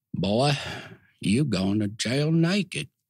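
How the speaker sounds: North Carolina drawl. Retelling being caught naked at nineteen, quoting the man in a North Carolina drawl. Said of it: "in this North Carolina drawl says".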